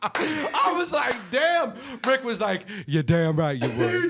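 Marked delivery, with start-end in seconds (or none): 2.9-4.1 put-on elderly man's voice. Retelling Rick's reply to a girl's answer, imitating Rick in an old man voice. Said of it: "I was trying to do like an old man voice".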